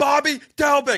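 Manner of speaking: very high, loud scream. Retelling a fan three rows back screaming at him, imitating someone screaming. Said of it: "he's just screaming at me".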